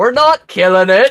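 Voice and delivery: loud, high-pitched yell. Voicing Rune squaring up in combat: yelling as Rune. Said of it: "yell up the whole".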